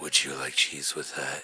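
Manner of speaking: creepy whispering voice. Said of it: "you gotta whisper".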